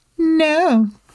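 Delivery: embellished, high, petulant "no". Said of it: "embellished the tone on Amy's no".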